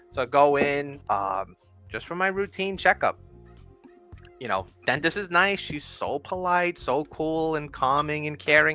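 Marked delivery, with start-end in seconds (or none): none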